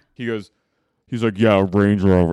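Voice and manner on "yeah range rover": put-on, very deep voice, getting louder. Retelling what a son on a show said: imitating Jack's deepest voice possible. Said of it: "He says it in, like, the deepest voice possible".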